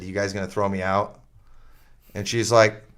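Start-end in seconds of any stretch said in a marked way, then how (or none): 0.0-1.2 acted nice, polite, friendly tone. Retelling answering a lady about a store's mask policy, imitating own nice tone. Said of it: "I'm I'm being real nice".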